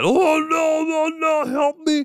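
over-the-top shrill cry, high, loud, dragged slow. Imitating a movie henchman's cry for help: over-the-top Bruce Campbell cry for help. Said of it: "that over the top".

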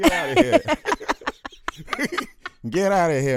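high, loud, mocking stammer.

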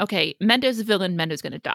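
ordinary talk

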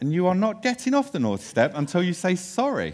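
put-on stern, strict, high-pitched child's scolding voice. Retelling a young daughter scolding a spilled water bottle: imitating a child scolding sternly. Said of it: "shouting downstairs or speaking very sternly".

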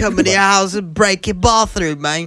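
jokey put-on British accent. Speaker doing their British accent for the group: British accent. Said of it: "That's my British accent".

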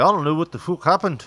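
put-on weak Irish accent. Imitating a guy from dublin in conversation, weak irish accent. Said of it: "I didn't do a proper Irish accent there".

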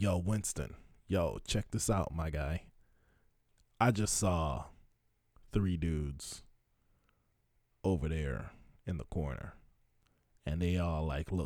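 low, hushed half-whisper, close in the ear. Imitating the overnight retail manager coming up close, imitating a half-whisper. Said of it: "why are you whispering?".

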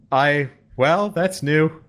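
put-on Danish accent. Retelling how Gull reacted when the boss died, imitating Gull. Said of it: "Why does he sound like Skitter?".

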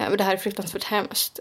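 ordinary delivery

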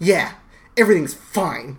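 mock, very sarcastic, loud dismissive tone. Recapping a scene, the speaker acts out a character's reply, imitating Jack's sarcasm. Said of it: "very sarcastic".

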